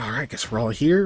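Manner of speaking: fast, distracted, absent-minded mumbling. Voicing a nervous character pacing and talking to himself: mumbling to himself. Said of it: "he's so in his head for a second that he's, like, mumbling it".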